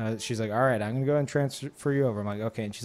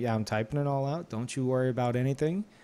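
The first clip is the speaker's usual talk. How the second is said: put-on sunny, cheerful voice. Retelling what a helpful phone agent said: imitating a sunny, cheerful agent. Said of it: "she was like a ray of sunshine".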